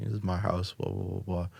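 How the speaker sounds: ordinary talk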